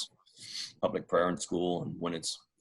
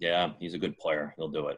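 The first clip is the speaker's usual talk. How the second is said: bone-dry, bored, very deadpan flat delivery. Retelling Belichick's answer to the press about the signing: deadpan Belichick impression. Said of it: "very deadpan".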